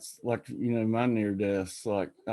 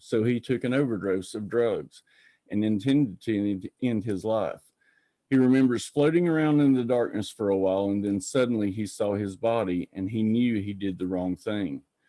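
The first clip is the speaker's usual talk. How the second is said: plain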